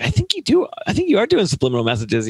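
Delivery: mock, high-pitched, sing-song, playful needling tone. Retelling how the Barney writers were teased: imitating own teasing.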